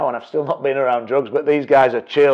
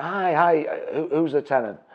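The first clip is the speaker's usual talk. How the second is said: usual speaking voice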